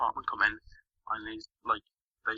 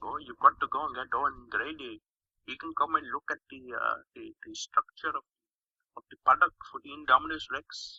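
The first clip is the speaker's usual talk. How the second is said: hushed, heavy put-on Indian English accent; 4 semitones higher, 7 dB quieter than usual. Reviewer retelling a film scene and quoting a character, in a thick Indian English accent. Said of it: "quite a thick Indian like English accent".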